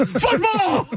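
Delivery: high, shouted football broadcast announcer call. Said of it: "you sound like the Bears, broadcast. Tom Thayer".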